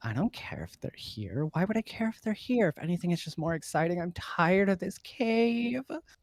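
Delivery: woman giggling and laughing through the words. Voicing an unseen woman overheard in a cave: woman giggling while talking. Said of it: "a woman's voice kind of, ... giggling".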